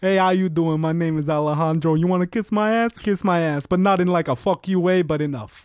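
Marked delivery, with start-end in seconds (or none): 0.0-3.7 flirty come-on delivery. Asked by the other speaker to imitate him hitting on somebody, imitating Alejandro flirting. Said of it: "Do an impression of me hitting on somebody".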